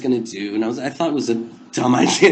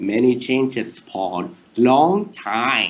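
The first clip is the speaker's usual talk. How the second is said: strange, very slow put-on voice, time drawn out; 2 semitones lower than usual. Retelling greeting Paul, who expected some girl, in a weird voice. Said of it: "in this weird voice".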